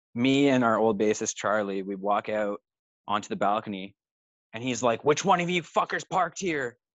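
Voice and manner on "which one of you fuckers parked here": high-pitched, acted-out screaming yell. Retelling a man yelling up at the balcony: imitating a man screaming.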